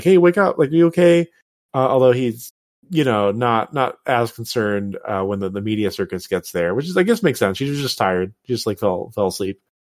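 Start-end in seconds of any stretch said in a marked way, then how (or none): 0.0-1.3 urgent, worried, loud, high alarmed scream. Retelling how a character reacts when she falls: imitating someone screaming.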